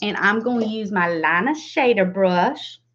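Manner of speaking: real Southern accent slipping in. Describing makeup steps while applying color, slipping into a southern accent. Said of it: "I got real Southern then".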